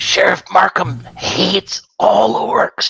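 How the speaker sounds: loud stage whisper. Speaker passing on what another character said so everyone hears, whispering out loud. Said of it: "I'm just going to whisper that out loud".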